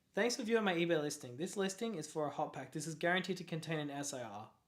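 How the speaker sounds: usual speaking voice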